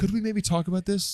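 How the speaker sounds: courteous English gentleman manner. Acting out how a guy would ask for a talk, as a British gentleman. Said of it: "He sounds like a British gentleman".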